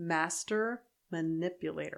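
slow, careful enunciation, each word deliberately spaced. Podcast host reading an episode title, careful not to screw up the wording, slowly and carefully. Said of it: "That's why I had to say it slow".

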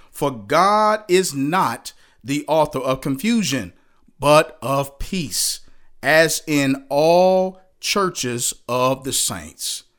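slow, deliberate, weighty and emphatic delivery. A speaker reading a Bible verse aloud, slow and emphatic. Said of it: "I hope I read that slow and emphatically enough".

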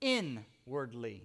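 heavy stress on the in- of inwardly. Preaching about Jesus gracing us from inside, stress on in of inwardly. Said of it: "And I'm emphasizing the word "in,"".

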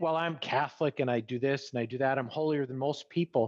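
plain

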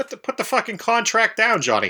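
mock Irish policeman voice. Speaker addressing Johnny in a comedy bit, George Carlin's Irish cop voice. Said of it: "You're bringing George Carlin's Irish Cop into the universe".

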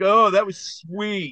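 high, drawn-out, gushing fanboy-style voice. Retelling a Saturday Night Live skit: imitating Chris Farley. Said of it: "Chris Farley's like".

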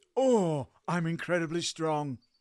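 mock unfit, out-of-shape voice. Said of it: "my best Bilbo Does Weights After Many Months of Inactivity impersonation".

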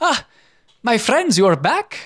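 put-on cat-folk shopkeeper voice. Voicing a shopkeeper greeting returning customers: Cloud the Tabaxi voice. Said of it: "holds out his hand and says".

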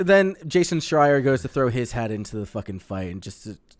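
ordinary talk

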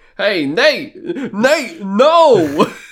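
loud, very slow, drawn-out, heavily stressed no. Voicing a movie character shouting a name: Christopher Walken voice. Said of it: "why does that sound like Christopher Walken?".

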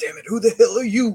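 high, loud, fast gruff impersonation. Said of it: "let's hear your Danny Glover impersonation".

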